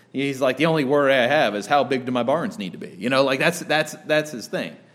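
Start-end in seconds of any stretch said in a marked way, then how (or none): 0.6-2.9 acted carefree, no-worries boasting. Acting out the rich fool from the parable: imitating a carefree rich fool. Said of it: "He is not worried".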